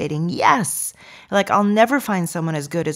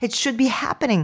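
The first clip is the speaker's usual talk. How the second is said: uneasy, fretful, anxious, a little high; 5 semitones higher than usual. Describing the feeling of being behind the ball, the speaker sounds anxious. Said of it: "Can you feel the anxiety in my voice as I say it?".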